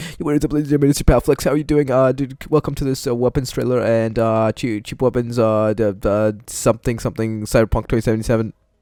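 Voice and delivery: super-fast, rushed, rapid-fire rattled-off patter. Video host demonstrates rushing through his intro: super-fast talking. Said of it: "I have to be like super speed from now".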